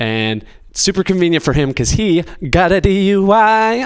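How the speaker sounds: high, sing-song delivery with wide pitch swings.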